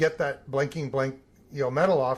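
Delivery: ordinary talk, nothing marked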